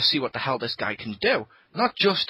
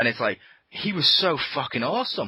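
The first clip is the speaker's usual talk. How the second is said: ordinary delivery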